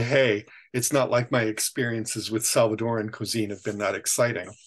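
ordinary delivery

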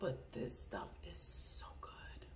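whispered, very quiet, barely audible. Telling viewers about a product, whispering. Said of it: "I'm whispering".

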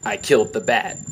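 very deadpan, utterly affectless delivery. Retelling a movie scene right after Batman dies, imitating Deadshot deadpan. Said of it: "in a very deadpan voice".

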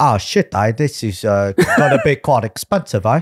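casual, nonchalant, unfazed delivery. Retelling what Gareth said after being hit by a car: imitating Gareth. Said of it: "and he was like".

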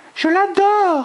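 loud exclaiming, very high-pitched. A character exclaims while smiling at another woman: exclaiming with a dazzling smile. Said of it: "s'exclama Bella en adressant un sourire ravageur".

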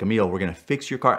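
ordinary talk, nothing marked

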